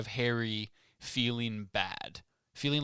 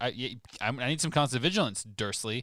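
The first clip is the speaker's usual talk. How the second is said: ordinary delivery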